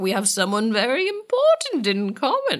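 put-on sweeping, old-timey vampire voice.

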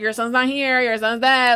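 play-acted jeering spoken through laughter. Retelling a creepy thing taunting a mother about her son, imitating a mocking laugh. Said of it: "he's just laughing like".

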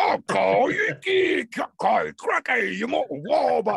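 broad exaggerated Cockney. A voice actor demonstrates the voice used for cartoons, full cartoon Cockney accent. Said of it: "it's that full Cockney".

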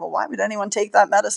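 ordinary delivery

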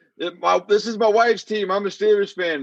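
heated yelling. Retelling how a fan at the stadium defended his outfit: imitating a fan yelling. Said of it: "He started yelling".

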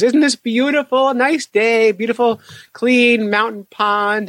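mock, very high, slow, lingering sentimental romantic tone. Retelling his wife wading barefoot in a mountain pond, imitating her romantic nostalgia. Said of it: "she gets very romantic and nostalgic".

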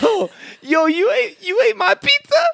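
very high-pitched, accusing tone. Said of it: "She's like".

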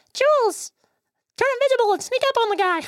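very high, tiny cartoon pangolin character voice. Voicing the party's pangolin advising Jules to sneak up: Jamal the pangolin's voice. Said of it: "that's his voice".

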